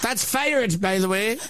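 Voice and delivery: mock Northern Irish shock jock accent.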